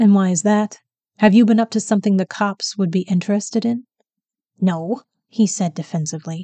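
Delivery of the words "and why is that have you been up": plain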